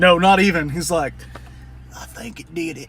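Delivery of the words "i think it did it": breathy southern accent impression, quieter. Describing a guy with a ridiculous southern accent, imitating a breathy southern accent. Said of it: "he's got that breath to his voice".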